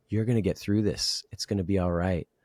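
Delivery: mock-tearful crying voice. Retelling talking out loud to themself during a breakup, retelling tearful self-comfort. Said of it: "talked out loud to myself while I was crying".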